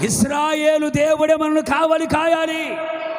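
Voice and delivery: high, loud shouted voice.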